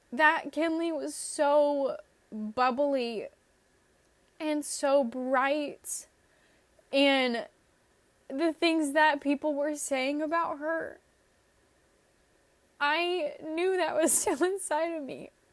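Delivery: tearful, speaking through crying. Speaker remembers her younger self while talking and starts crying: crying. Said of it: "I don't know why I'm crying".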